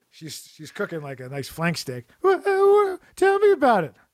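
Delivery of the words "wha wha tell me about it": very high, stammering, put-on voice. Acting out the wife answering her husband after work: put-on wife voice. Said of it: "That's her voice".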